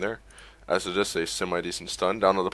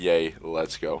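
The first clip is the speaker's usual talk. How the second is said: sarcastic, half-hearted, deadpan, unenthusiastic cheer. The caster, ready to start the draft, cheers: unenthusiastic sarcastic cheer. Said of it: "That was very, very unenthusiastic".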